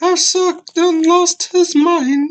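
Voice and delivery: horrible put-on British accent, very high and loud. Retelling a story about Johnny, the speaker tries a bad British accent. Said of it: "That that's the best British accent I can do".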